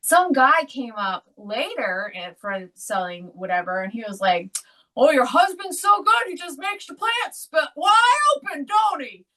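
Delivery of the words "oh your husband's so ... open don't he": loud, shrill, high-pitched yell. Retelling what a man at the show said: imitating someone yelling. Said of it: "just yelled it real loud".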